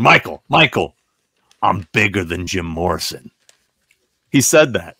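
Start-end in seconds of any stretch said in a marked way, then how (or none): 0.0-3.3 mock deadpan delivery, voice lowered, dead serious. Retelling what Tony said into the camera: imitating Tony's deadpan delivery. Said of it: "Tony looks deadpan in the camera and he goes".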